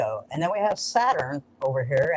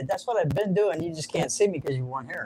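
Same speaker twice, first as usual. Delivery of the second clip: usual speaking voice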